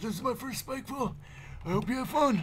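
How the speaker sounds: put-on old man voice, pitched very high. Voicing a game character as an old man: put-on old man voice. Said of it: "I'm gonna be an old man".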